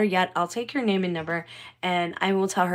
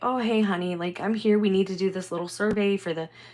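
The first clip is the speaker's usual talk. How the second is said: mock condescending tone, male voice. Retelling what a man from the city said on arrival: imitating a condescending man. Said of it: "he's being very, like, condescending".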